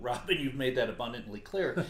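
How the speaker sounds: plain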